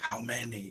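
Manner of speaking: very quiet, hushed, barely audible half-whisper. Speaking in character while hiding near boulders: half-whispered hushed tone. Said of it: "ask in a whispered, uh, hushed tone".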